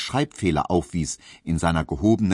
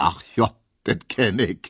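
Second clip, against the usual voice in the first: amused voice, said with a laugh. A man reacts to a card his colleague hands him; laughing. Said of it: "sagte Herr Tesch lachend".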